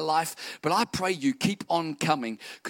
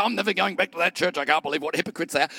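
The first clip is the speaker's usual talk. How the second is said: mock huffy voice, sore, bitter and offended. Imitating an offended churchgoer quitting church: imitating a bitter, offended churchgoer. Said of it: "don't get all bitter and offended and say".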